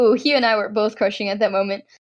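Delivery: normal talking voice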